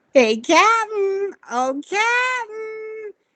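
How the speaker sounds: very high, full cartoon voice. A voice actor introduces his cartoon role on a podcast, in the Flapjack voice. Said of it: "I do the voice of Flapjack".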